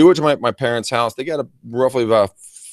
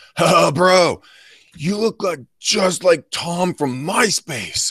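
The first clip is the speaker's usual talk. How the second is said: put-on, very slow, high, drawn-out drunken drawl; 8 semitones higher than usual. Retelling what a drunk stranger at a bar said: imitating a really drunk guy. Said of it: "this really drunk dude comes up to me and goes".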